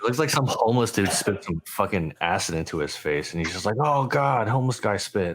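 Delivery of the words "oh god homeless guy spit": revolted, grossed-out, disgusted exclamation. Guessing what is happening in a photo, imitating Jimmy grossed out. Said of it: "grossed out".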